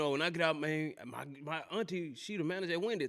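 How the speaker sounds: normal talking voice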